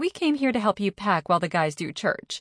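ordinary delivery, nothing marked

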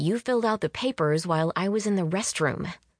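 ordinary delivery

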